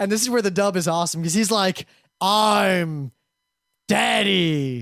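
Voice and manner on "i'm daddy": put-on creepy creature voice, lower pitch. Retelling a dubbed scene, quoting the character: creepy Entei voice. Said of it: "he says it really creepily".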